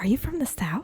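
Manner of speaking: soft, secretive whisper under the breath. Retelling a question to a lady in a store: imitating a whisper. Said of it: "I whispered, I was like".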